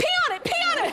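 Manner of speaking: high, mock urgent pleading voice.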